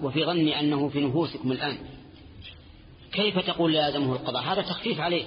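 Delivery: ordinary delivery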